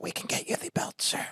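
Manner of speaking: soft, gentle, polite whisper. Retelling how staff in America offer the belt: imitating a quiet, gentle voice. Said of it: "they'd come up to you quietly".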